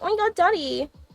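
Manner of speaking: put-on, high, cutesy fake little girl voice. Speaking to viewers, showing the character for girlfriend-experience content: fake little girl voice. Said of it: "look up through your eyelashes like".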